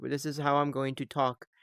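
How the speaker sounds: put-on flat, even voice. Reviewing a movie's acting, doing Jay's flat monotone. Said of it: "Jay was talking very much like this".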